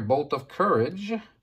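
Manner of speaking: normal talking voice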